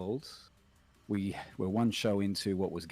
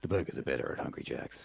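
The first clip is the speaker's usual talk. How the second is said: ad announcer voice, lower pitch; 7 semitones lower than usual. Reading an advertising line on request: advertisement voiceover voice. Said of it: "advertisements with that kind of a voice".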